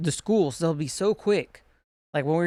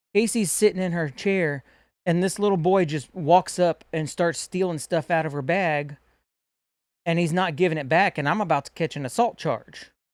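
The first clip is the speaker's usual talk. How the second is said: ordinary delivery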